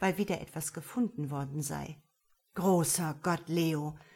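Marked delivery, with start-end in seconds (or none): 2.5-3.9 mumbling, words meant only for oneself. He mutters to himself as he walks over to the tarp: muttered to himself. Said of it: "murmelte er vor sich hin".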